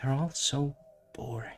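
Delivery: leaning-in, hushed, confiding whisper. Voicing Rhaenyra leaning close to share gossip: whispering. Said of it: "gets close when she says it and whispers".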